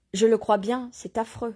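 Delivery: ordinary delivery, nothing marked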